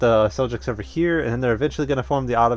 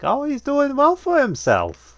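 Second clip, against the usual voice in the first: very high, swooping, grandmotherly lilt; 14 semitones higher, 3 dB louder than usual.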